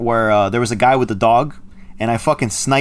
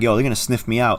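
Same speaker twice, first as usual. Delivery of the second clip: normal talking voice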